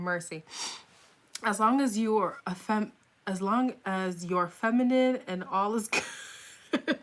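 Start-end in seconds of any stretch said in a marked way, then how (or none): 1.4-7.0 words breaking up, laughing hard throughout. Reading a comment after admitting near tears: laughing hard while talking. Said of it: "I'm about to cry from laughter".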